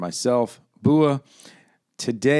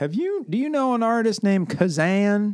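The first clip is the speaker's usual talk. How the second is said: high, mock clueless voice. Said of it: "They're like".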